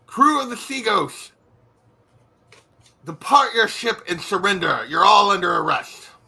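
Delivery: loud booming call. Narrator voices someone hailing the crew of the Sea Ghost: loud booming voice. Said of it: "you hear a loud voice boom out".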